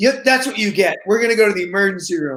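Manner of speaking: put-on sour, grudging, surly and unsympathetic tone. Retelling words said to a child in pain at night: imitating own surly tone.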